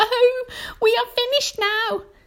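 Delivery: shrill, very high cry of despair. Reading a story aloud, voicing Miss Spider as panic breaks out: Miss Spider crying out. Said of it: "cried Miss Spider, wringing her feet".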